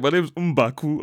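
put-on Nigerian accent. Recalling a film character heard in the cinema, imitate M'Baku's Nigerian accent. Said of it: "has a good Nigerian accent when he's playing".

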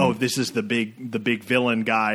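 normal talking voice

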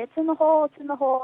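put-on man's shout. Retelling a hole-in-one, imitating a man on the green shouting. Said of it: "guy standing on the green shouting".

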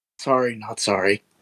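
hushed, quiet mutter under the breath. Retelling a reply to someone's loud belch: muttered under breath. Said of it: "just like under my breath".

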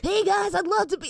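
put-on cartoon boy voice. Asked to prove your impression in the studio, try again while still laughing, as a Milhouse impression. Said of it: "that sounded just him".

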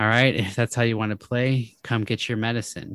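ordinary delivery

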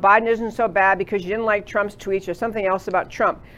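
ordinary talk

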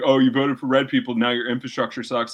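ordinary talk, nothing marked

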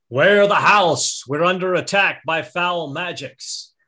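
loud, high-pitched parade-ground yell. Player voicing Hagen turning to yell to the house; Hagen's parade-ground NCO yell. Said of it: "in his best parade ground NCO voice yells out".

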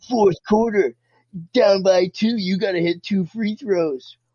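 mild coach yell. Retelling how a basketball coach screamed in a player's ear: imitating a coach screaming. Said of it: "starts screaming in your ear".

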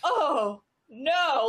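acted appalled, revolted, disgusted exclamation. Retelling women reacting to an audiobook reading, imitating disgusted women. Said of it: "absolutely disgusted by it".

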